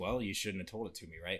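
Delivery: plain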